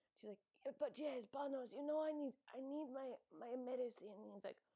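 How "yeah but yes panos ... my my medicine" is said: put-on pitched-up, muddled Russian-British chain-smoker accent. Retelling Lindsay Lohan asking Panos for her medicine: Lindsay Lohan accent. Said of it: "Lindsay Lohan has this, like, Russian slash, like, British slash chain smoker accent now".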